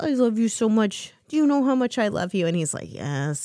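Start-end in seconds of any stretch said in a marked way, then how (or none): 0.0-2.5 high, fond, doting pet-owner voice. Retelling what she tells her cat when she picks him up, proper cat mom voice. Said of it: "in proper cat mom voice".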